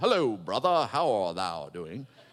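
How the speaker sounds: very low, put-on solemn reverent tone. Imitating how some believers talk once they walk into church: put-on church voice. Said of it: "It's my church voice".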